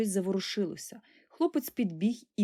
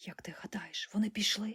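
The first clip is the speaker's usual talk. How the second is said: whispering, much quieter; 8 dB quieter than usual. Frozen with a friend as the noise behind the door stops, asking in a whisper. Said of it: "запитав пошепки Сашко".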